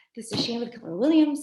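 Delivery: rushed, fast, rattled-off spiel. Demonstrating how they leave a voicemail, saying it very fast. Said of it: "I say it so fast".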